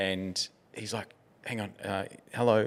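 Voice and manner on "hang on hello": acted-out awkward manner. Retelling a story in which the king greets someone: imitating an awkward greeting. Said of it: "he was just so awkward around this person".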